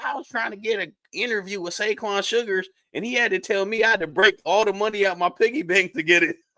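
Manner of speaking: put-on slight country accent. Quoting a teenage kid who interviews wrestlers: little country accent. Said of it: "he's got a little country accent".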